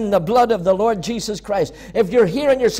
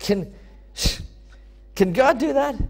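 dry, disbelieving, mocking sarcasm, acted out; 3 semitones higher, 5 dB quieter than usual. Speaker quoting people asking whether God can do it: imitating a sarcastic question. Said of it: "I really think they said it in a sarcastic way".

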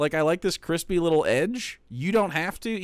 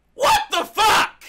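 full-on shrill yell, pitched very high; 14 semitones higher, 6 dB louder than usual. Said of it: "Now I'm yelling!".

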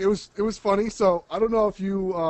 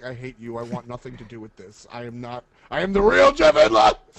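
mock-angry outburst, much lower and slower; 6 semitones lower, 4 dB louder than usual. Retelling how a man reacted when introduced, mock-angry outburst. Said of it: "He's like".

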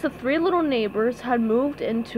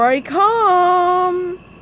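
ordinary delivery, nothing marked

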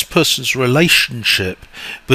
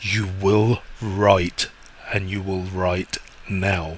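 low, slow, sinister, menacing, ominous voice; 5 semitones lower, 7 dB quieter than usual. Describing a writer who imagines a voice ordering him to write, deep sinister voice. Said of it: "this really deep, sinister voice".

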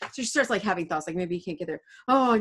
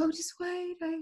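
falsely tired nurse voice, high and soft. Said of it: "the nurse is pretending to be tired".

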